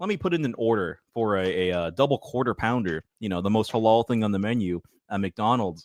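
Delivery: ordinary talk, nothing marked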